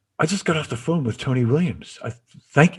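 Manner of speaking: put-on everyday, casual South African accent. Retelling what Anton said when he called later, in Anton's South African accent. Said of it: "with his South African accent".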